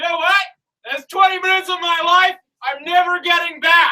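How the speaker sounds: very high, shrill shout. Telling of a man at a cafe door who turns back, retelling a man's shout. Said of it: "he just shouts".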